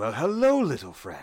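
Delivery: friendly, smiling dragon voice. Narrator voicing a smiling dragon greeting a player, friendly dragon voice. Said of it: "And he looks and he's like".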